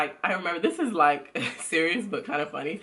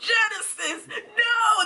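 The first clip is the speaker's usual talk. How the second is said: very high shout with long stretched no; 3 dB louder than usual. Retelling how the father reacted at bath time: imitating someone yelling. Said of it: "he's literally yelling".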